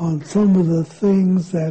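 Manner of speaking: plain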